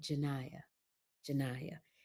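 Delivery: very soft, hushed, sultry, sexy dramatic acting voice. Retelling a take where she kept saying a character's name: put-on dramatic acting voice. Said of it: "That's my dramatic voice".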